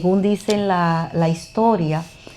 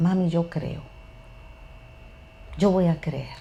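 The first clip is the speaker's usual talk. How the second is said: acted-out weepy, tearful whisper; 9 dB quieter than usual. Retelling what she said when she came over: imitating someone crying. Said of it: "va donde mí llorando y me dice".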